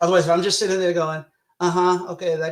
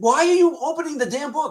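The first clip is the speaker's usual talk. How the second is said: acted-out, very high, exasperated shout; 10 semitones higher, 3 dB louder than usual. Explaining how viewers get into a horror movie, the speaker imitates yelling at the screen. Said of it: "you're yelling".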